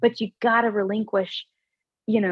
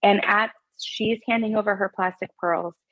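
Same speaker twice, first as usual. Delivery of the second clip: ordinary talk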